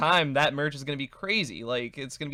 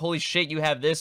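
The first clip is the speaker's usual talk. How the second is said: ordinary talk, nothing marked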